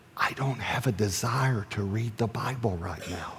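very quiet, secretive, slow, hushed half-whisper. Retelling a private talk in a hot tub, imitating her half-whisper. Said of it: "and then she whispered".

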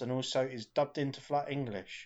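ordinary talk

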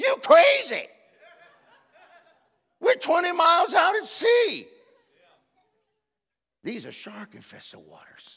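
very high, loud, swooping incredulous outburst. Retelling being told to jump in at sea, acting out an incredulous reaction. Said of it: "I looked at him like".

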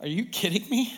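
answered while laughing. Retelling how a mother answered a young priest: imitating her laughing reply. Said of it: "she looked at him laughing".

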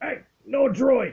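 gruff alien creature voice, very high and loud. Game master voicing an alien as the players enter the cantina, very gruff alien voice. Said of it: "you hear a very gruff alien voice say".

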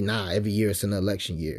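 ordinary delivery

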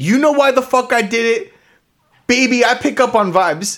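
high, shrieking scream, ranting. Retelling what a housemate screamed during a competition: imitating Josh screaming. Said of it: "Josh is screaming, quote".

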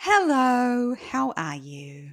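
creepy, slow, hello dragged out. Opening a show episode by greeting a guest, in a creepy voice. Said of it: "I said hello in such a real creepy voice".

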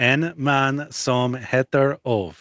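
pretty good Swedish accent. Repeating a swedish title aloud for the others, in a swedish accent. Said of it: "That's a pretty good Swedish accent".

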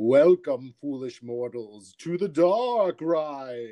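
slow, spooky ghost voice, drawn out. Podcast host opening a Haunted Mansion episode, doing a Paul Frees impression. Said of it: "That's my Paul Frees".

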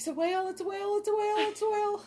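very high, loud, repeated screaming. Retelling being at the tiller when a whale jumped near the boat: retelling a scream. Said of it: "I started screaming".

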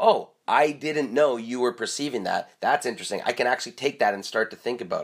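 ordinary talk, nothing marked

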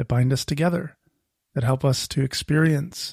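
plain

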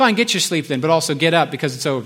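ordinary talk, nothing marked

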